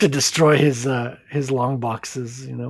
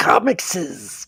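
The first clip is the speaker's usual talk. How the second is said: put-on creature voice, doubled plural in "comicses"; 4 semitones higher than usual. Explaining that adding an S sounds like Gollum: Gollum voice. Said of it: "starting to sound like, um, Gollum".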